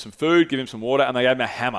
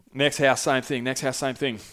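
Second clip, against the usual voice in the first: ordinary talk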